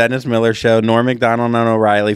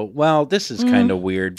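plain

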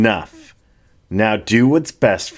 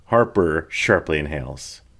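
ordinary delivery, nothing marked

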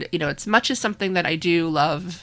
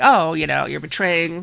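put-on sassy, indignant tone; 4 dB louder than usual. Retelling how someone reacted to being betrayed, retelling a sassy remark. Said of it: "he tries to get a little sassy".

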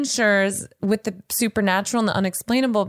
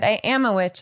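openly proud, confident delivery. After announcing they will say it with pride, a statement said with pride. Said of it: "I'm going to say it with pride".

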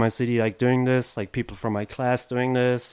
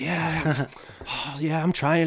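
put-on furious voice, higher pitch; 5 semitones higher than usual. Retelling a skater's reply to a pestering kid: imitating someone super pissed. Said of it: "super pissed".

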